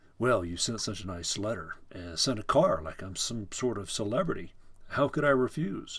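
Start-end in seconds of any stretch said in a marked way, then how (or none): none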